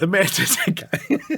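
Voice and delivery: speaking through laughter. Rereading a funny phrase from a comment: laughing while talking. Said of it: "I can't say it without laughing".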